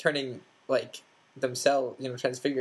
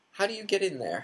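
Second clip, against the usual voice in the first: innocent-sounding, slightly high voice; 6 semitones higher than usual. Hermione asking Fred about the kitchens, innocent sort of voice. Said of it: "Hermione said in an innocent sort of voice".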